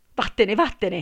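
piercing, wild, desperate, loud shriek. A woman answers a man's demand for a kiss, shrieking. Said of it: "strillò lei".

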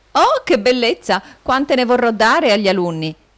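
eager, delighted, high, gleeful outburst. Narrator reads a young boy grabbing his father's cane: joyful exclamation. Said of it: "esclamò l'interessante fanciullo".

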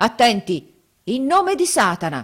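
grand, ceremonious shouting. A self-proclaimed magician calls a dead baron before the gathered company: solemn shout. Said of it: "gridò poi con aria solenne".

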